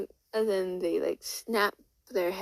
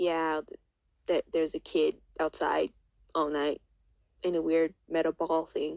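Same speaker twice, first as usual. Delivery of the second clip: normal talking voice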